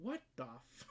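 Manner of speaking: hushed whisper under the breath. Narrator backs out of a room and mutters to themself, whispering. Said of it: "I whispered to myself".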